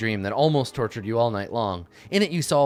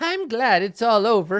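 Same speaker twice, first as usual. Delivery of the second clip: drawn-out, slow, very high falsetto; 10 semitones higher than usual. Wrapping up a game, a line delivered in falsetto. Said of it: "I did like a falsetto".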